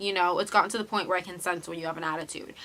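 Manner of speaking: plain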